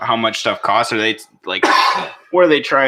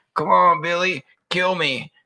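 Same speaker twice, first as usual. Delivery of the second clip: put-on cartoon grandpa voice, high and slow; 7 semitones higher than usual. Imitating a defendant on the stand: Stan's grandpa voice. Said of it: "sounding like fucking Stan's grandpa".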